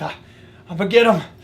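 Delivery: winded, catching breath. Between moose facts, the narrator pauses to speak out of breath. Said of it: "just catch my breath".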